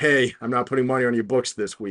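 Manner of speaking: ordinary talk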